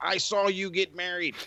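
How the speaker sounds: mock shouting, high pitched yell. Retelling yelling into a screen at someone: retelling own yell. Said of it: "yelling into the screen".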